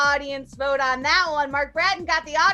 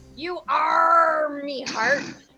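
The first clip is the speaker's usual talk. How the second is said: put-on pirate-speak voice. Delivering the punchline of a pirate joke, pirate voice. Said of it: "How does a pirate say "I love you"?".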